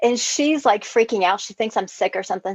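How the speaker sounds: ordinary talk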